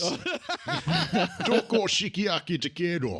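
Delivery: put-on Japanese in Scottish accent. Joking about an actor's roles, one speaker imitates him speaking Japanese. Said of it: "Or that time he spoke Japanese".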